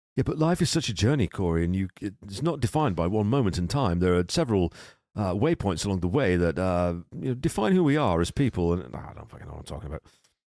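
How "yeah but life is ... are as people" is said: put-on posh broadcaster voice. Mid-conversation, the speaker muses to Corey in a put-on BBC Radio 4 voice. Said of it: "Why am I doing that voice?".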